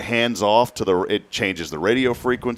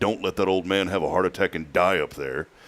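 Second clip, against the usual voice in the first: mock stern, very serious, grave fatherly tone; 3 semitones lower, 3 dB quieter than usual. Retelling a father's warning before a flight: imitating a very serious tone. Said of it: "in a very serious tone".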